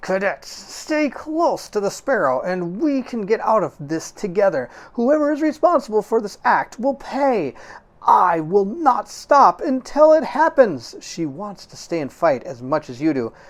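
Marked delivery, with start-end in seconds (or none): 0.0-10.9 words squeezed through clenched, gritted teeth. Captain Soma on the comm, speaking to the cadets: through gritted teeth. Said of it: "her words barely getting through her gritted teeth".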